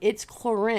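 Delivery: firm delivery with falling intonation at the end.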